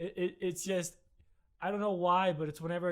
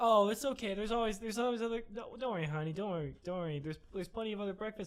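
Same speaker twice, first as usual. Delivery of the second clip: mock soothing comforting tone, higher; 3 semitones higher than usual. Retelling how she always tries to comfort the speaker, imitating someone comforting. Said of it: "she tries to comfort me".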